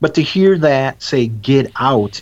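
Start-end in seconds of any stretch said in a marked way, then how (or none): 1.3-2.2 put-on haunting, ghostly guttural voice. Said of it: "in a very haunting, guttural voice".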